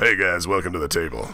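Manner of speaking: deep gruff storyteller voice. Answering in the storyteller's voice after the remark on it: deep gruff storyteller voice. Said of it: "your storyteller's voice is so deep and gruff".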